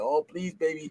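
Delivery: put-on imploring, pleading, begging tone. Acting out how he talks to his daughters: imitating own begging. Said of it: "I'm begging and pleading with them".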